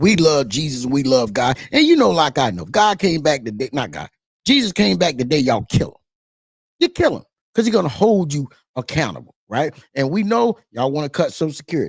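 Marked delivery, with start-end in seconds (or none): 0.0-1.6 slow, soothing, placating tone, acted out. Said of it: "with this placating".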